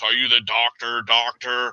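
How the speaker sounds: deep, grand, pontificating voice. Retelling how a lecturer held the audience: imitating a deep pontificating voice. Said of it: "demanded the audience with his deep voice".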